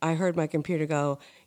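ordinary delivery

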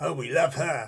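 clumsy, badly faked, really bad Australian accent. Chatting about their shows, speaking in a really bad australian accent. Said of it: "really bad Australian accent".

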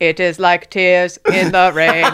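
booming, loud, flat, mechanical robot voice. Showing the others they can do it too; robot voice. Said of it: "I can do a cool robot voice".

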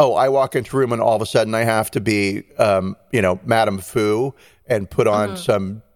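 ordinary talk

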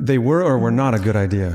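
sarcastic tone.

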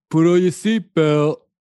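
very loud, high-pitched shouting. Retelling a movie scene, quoting the hero: Stallone impression. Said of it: "I don't think your Stallone is".

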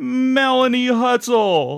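very high, big announcer call. Volleying names back and forth, in a Don Pardo announcer voice. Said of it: "in our Don Pardo voice".

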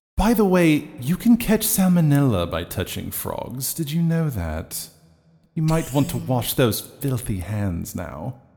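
hushed, murmured half-whisper. Sending a magic message to another character: half-whispering. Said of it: "this whispering".

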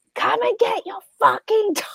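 very high, shrill, insistent screaming. Retelling a dog attack on the street: retelling a scream. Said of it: "I was just screaming down the street".

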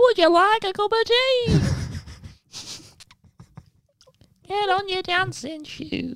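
put-on soft falsetto voice with Yorkshire accent. After reading out Orville's wiki entry, Orville's falsetto Yorkshire voice. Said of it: "he speaks in a falsetto Yorkshire accent".

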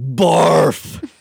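yelling out. Answering what word he would yell to gain superpowers; yelling. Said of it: "I would yell".

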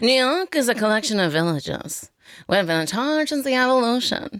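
nasal impression voice. Show listeners how Christine Baranski talks, in a nasally Christine Baranski impression. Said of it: "She talks like that".

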